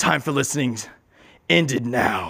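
deep, dropped put-on character voice. Retelling a confrontation, voicing the brain's line: deep voice of the brain. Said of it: "The brain has a deep voice".

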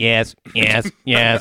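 robotic voice-box voice. Speaker imagining throat-cancer patients with voice boxes having sex, Stephen Hawking voice-box voice. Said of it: "that voice box".

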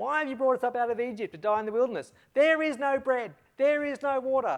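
high whiny complaining. Reading aloud the people's complaint against Moses, whingeing. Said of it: "they're having a whinge".

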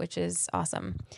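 super sarcastic, meaning the opposite. Finishing a remark to another speaker: sarcastic tone. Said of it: "that's sarcasm, folks".

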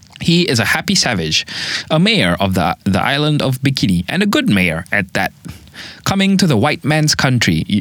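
put-on clumsy old-time American infomercial voice. Quoting old American descriptions of Bikini Island's mayor, in a bad old American impression. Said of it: "That's me trying to sound like an old American".

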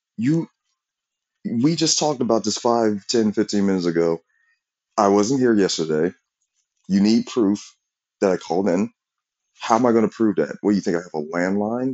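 ordinary delivery

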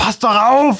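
acted-out, high-pitched yelling. Retelling how a woman screamed at the speaker, retelling someone screaming. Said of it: "und dann schreit die mich so an".

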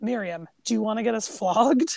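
low, calm mutter from the mouth's corner. Retelling a scene where Aaron speaks to Miriam: muttering from the side of his mouth. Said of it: "out of the side of his mouth is just saying".

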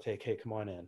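ordinary delivery

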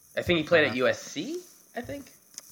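high, swooping tone climbing up at the end. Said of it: "The way my voice went up just now".

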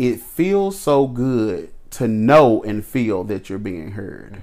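slow, unhurried, weighty and deliberate phrasing. Repeating a line so that it can hit, said slowly. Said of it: "I'm gonna say it slowly".

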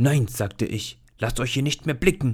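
resolute yet quavering. Narrator reads the dwarf answering through an open window: firm but trembling voice. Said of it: "bestimmt und doch mit zitternder Stimme".

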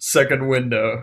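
very depressing, slow droning voice.

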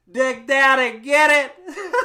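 all-out, top-of-the-lungs, high, loud, drawn-out yell. Retelling cheering him on as he comes down the straightaway: retelling a top-of-lungs scream. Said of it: "I scream at the top of my lungs".

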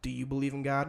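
dry, flat, expressionless deadpan. Retelling turning to a lady stopped at a red light, retelling a deadpan question. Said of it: "and I deadpan just go".

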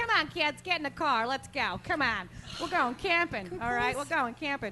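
loud put-on Midwestern accent. Speaker channeling a Midwestern soccer mama calling the kids: Midwestern American accent. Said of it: "I can only do an American accent when I sound like a complete asshole. There's something about I just channel Midwestern soccer mama".

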